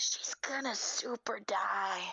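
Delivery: whispered aside, loud enough to carry. Having just joined the scene, turning to another player: loud whisper. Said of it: "I'm gonna be like loudly whispering".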